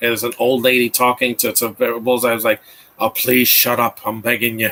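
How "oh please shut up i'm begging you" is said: put-on clumsy Irish accent. Retelling a movie scene with an old lady: dumb Irish accent. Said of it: "I know that's a dumb accent".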